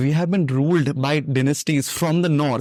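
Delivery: ordinary delivery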